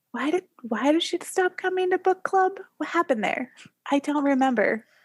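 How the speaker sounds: stage half-whisper aside. Recounting half-whispering a question to Renette, retelling a half-whisper. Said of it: "I'm I'm whispering to Renette".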